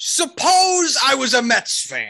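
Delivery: very high, swooping hollered shout. Retelling how a man in a truck rolls down his window at the speaker, imitating a man shouting. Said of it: "looks over at me and shouts".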